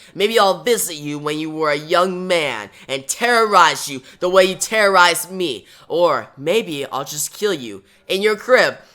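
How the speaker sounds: plain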